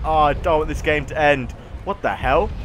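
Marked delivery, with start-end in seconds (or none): none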